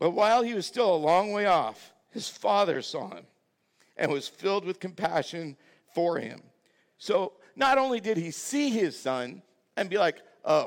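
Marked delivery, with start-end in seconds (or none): 0.0-6.4 heartfelt, touched, emotional, moved. Self-described dad telling a story of a father and son, getting emotional. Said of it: "Sorry, I get emotional".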